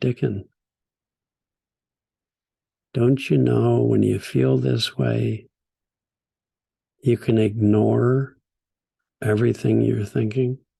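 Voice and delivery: acted tender, soothing, very sweet, gentle voice. Retelling what a friend said while sitting beside him: imitating a sweet, gentle voice. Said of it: "very sweetly, very sweetly, very gently".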